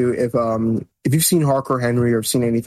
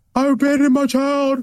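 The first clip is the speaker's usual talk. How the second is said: screamed delivery, pitched higher. Quoting a screamed line from There Will Be Blood: imitating Daniel Day-Lewis screaming.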